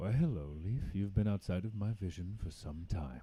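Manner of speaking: deep, low voice. Narrator voicing a voice speaking into a character's mind: deep voice. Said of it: "a deep voice into your mind".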